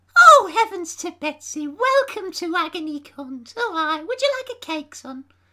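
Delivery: fake, doting old lady voice. Asked to do it again, welcoming listeners: put-on old lady voice. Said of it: "do that again".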